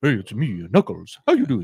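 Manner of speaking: very low, deep, swinging, swooping would-be actor voice. Imitating how a show's actor voices Knuckles, in a deep Knuckles voice. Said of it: "he's doing like a very like deep".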